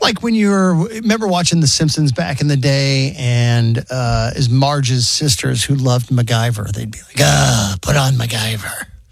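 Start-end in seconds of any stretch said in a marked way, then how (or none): 7.2-8.8 slow, raspy smoker's voice. Imitating Marge's sisters from The Simpsons: imitating raspy smoker's voice.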